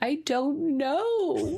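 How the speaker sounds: put-on tearful, high crying child's whimper, know drawn out. Parent retells their oldest child answering while crying; imitating someone crying. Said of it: "I'm just crying".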